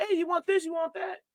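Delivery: silky smooth voice, very high and soft. Riffing on a joke, the speaker imitates a drive-through ordering voice, smooth drive-through voice. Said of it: "this smooth ass voice come up like".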